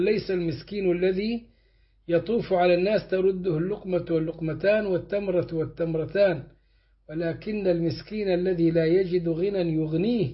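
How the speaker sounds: ordinary talk, nothing marked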